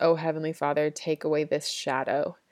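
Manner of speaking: normal talking voice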